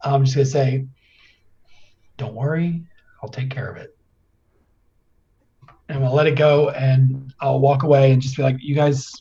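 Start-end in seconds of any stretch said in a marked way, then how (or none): 2.2-3.9 barely audible, very quiet whisper under breath. Setting something down, hoping the others nearby can't hear, quiet whisper under breath. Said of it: "very quietly whisper under my breath".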